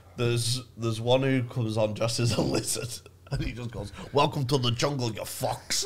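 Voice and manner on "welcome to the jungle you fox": put-on New York gangster voice. Retelling a comedian's lizard-costume bit at a comedy festival: Joe Pesci-style New York gangster voice. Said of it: "Just does it like New York gangster sort of voice".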